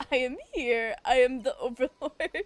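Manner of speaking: fantasy dragon overlord voice. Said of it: "Hear this in Smog's voice".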